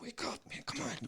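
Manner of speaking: hushed, very soft, high-pitched, gentle coaxing. Retelling how a man shook him awake during a movie; imitating quiet urging. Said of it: "in this quiet thing, well, he's, you know, he wasn't yelling".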